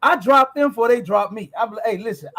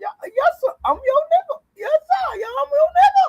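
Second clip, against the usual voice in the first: very high voice climbing still higher. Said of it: "Did you hear how high his voice got".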